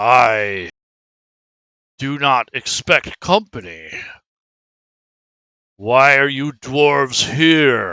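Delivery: mighty, slow, very powerful dragon voice. A storyteller voices a creature peering into the darkness at the dwarves, very powerful creature voice. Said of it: "the tone of his voice is very, very powerful".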